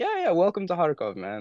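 mock very high voice, chuckling through the words. Retelling what a friend said after handing over shrapnel: imitating someone laughing while talking. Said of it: "kind of laughing".

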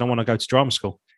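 ordinary talk

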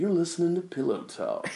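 soft, smooth, calm, purring late-night radio DJ voice.

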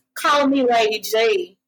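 put-on very slow, drawled light Southern accent. Retelling what a man said, imitating a southern accent. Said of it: "he said in his little Southern accent".

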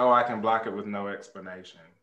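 plain

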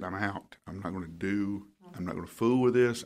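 plain

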